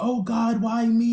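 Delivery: put-on very slow, wailing, sobbing, high scream. Recalling the moment their jaw was broken, retelling a crying scream. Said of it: "I'm crying and I'm screaming".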